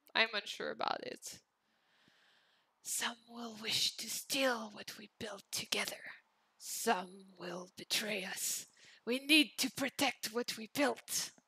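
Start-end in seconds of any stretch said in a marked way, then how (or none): 2.8-11.3 hushed, paranoid, conspiratorial whispered voice. Trying out a voice for a character's lines: whispered character voice. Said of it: "let me try the whisper voice".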